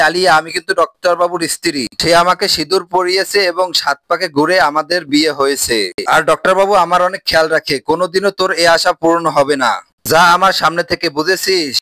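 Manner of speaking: normal talking voice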